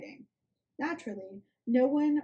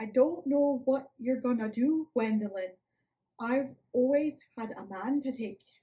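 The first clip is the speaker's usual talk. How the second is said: terrible put-on Midwest accent, slipping into Irish; 2 semitones higher than usual. Speaker tries a character's accent anyway while retelling a scene, bad Midwest accent. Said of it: "I tried to do the accent and I was terrible... I'm gonna try it anyway".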